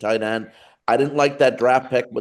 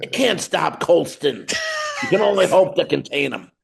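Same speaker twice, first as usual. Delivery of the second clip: poor put-on voice, raspy and a little higher; 6 semitones higher than usual. Quoting a sportscaster's catchphrase about a receiver: Dan Patrick impression. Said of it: "that was not a good Dan Patrick impression".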